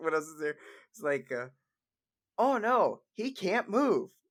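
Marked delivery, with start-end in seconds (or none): 2.4-4.0 very slow, drawn-out announcer voice. Talking about Pokemon Stadium, the speaker slips into the Pokemon Stadium announcer voice. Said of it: "you almost sound exactly like the announcer".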